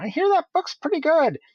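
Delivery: very high, swooping cartoon voice. Walking up to a fan reading a book from the show: Ice King voice. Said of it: "in my best Ice King voice".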